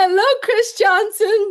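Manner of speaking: over-the-top shouting, high-pitched and very loud.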